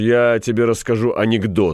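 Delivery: ordinary delivery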